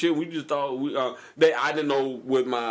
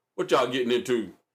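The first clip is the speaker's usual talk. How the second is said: mock commanding, big stern delivery. Retelling calling out to young men behind an apartment: big stern voice. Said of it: "I said with a big stern voice".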